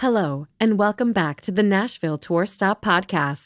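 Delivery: robotic, automated computer assistant voice. Welcoming listeners back to the podcast in an automated computer Siri voice. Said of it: "automated computer Siri".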